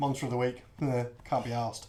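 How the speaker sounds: ordinary delivery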